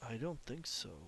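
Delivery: empty, hollow tone. Voicing the being that Moss has just greeted, in a hollow voice. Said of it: "but it's very hollow".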